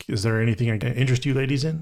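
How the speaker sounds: ordinary talk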